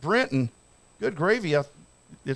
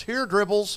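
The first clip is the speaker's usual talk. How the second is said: mock, easy calling-out, yelling tone; 3 semitones higher than usual. Retelling what the wife yells while whistling: imitating the wife yelling. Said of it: "the wife whistles at you and yells".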